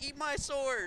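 very high-pitched cartoon hero voice, pushed way up. Streamer helping with sound effects during a game, doing a Finn impersonation. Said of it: "That's my best Finn impersonation".

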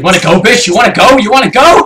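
put-on Scottish accent. Player being chased by chickens in a game, taunting them, Scottish accent. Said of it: "She approves of your Scottish accent".

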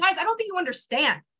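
excited and high-pitched. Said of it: "I still would get hyped".

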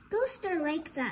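usual speaking voice

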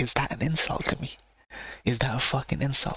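plain

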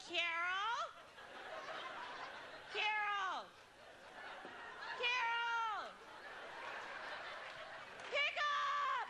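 put-on desperate pleading, very high-pitched, very slow, drawn-out. Retelling a message left on the machine, imitating someone desperate. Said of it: "It is the most desperate tone in her voice".

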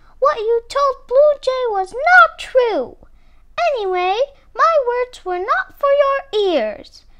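very high, loud, reproachful scolding tone. Confronting him over what he told another bird: scolding. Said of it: "she scolded".

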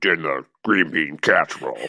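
spooky voice. Reading a requested line in a skit: scary voice. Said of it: "Can you read this in your scary voice?".

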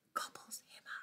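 hushed scary whisper.

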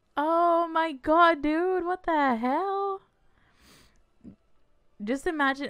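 emotional, high, loud, teary, close to crying. Reacting to an episode, the speaker is speechless: tearing up. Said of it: "and I'm already fucking crying".

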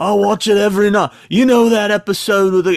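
excited, high, loud, put-on rock-star shout. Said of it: "And he goes".

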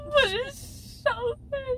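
crying, tearful whine, high-pitched and slow.

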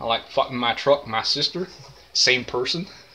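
put-on southern drawl. Joking with a friend after announcing a new accent: put-on southern accent. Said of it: "I now have a southern accent".

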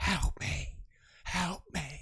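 soft, eerie, creepy ghost whisper. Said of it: "It's the same voice that just went".

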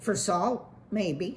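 plain

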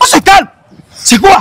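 high-pitched, stern and angry.

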